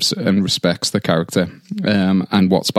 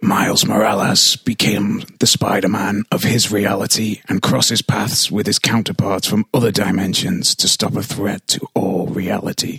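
put-on, mock-menacing voice. Urged on by the others, the speaker reads a plot summary in a put-on menacing voice. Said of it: "Just sound as menacing as I can".

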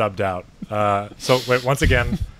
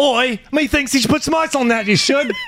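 put-on very high Cockney English accent; 4 dB louder than usual. Doing a round of accent impressions for the others: Cockney English accent. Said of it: "basically like Cockney English".

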